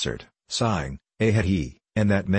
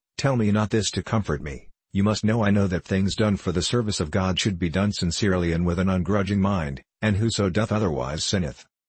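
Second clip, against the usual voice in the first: ordinary delivery, nothing marked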